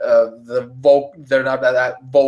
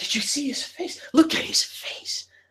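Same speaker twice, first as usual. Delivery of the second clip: hushed, gossipy whispered chatter; 8 dB quieter than usual. Voicing onlookers whispering about a scarred face: gossipy crowd whispers. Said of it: "you start to hear, like, whispers".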